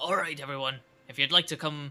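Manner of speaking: ship captain character voice. Voicing the captain inviting everyone upstairs: ship captain voice. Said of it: "this is a different voice than what it was last time".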